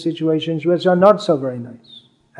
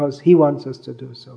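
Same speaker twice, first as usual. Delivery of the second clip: He given the main stress. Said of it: "we want to do so".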